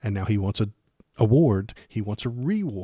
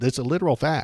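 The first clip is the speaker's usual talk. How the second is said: ordinary talk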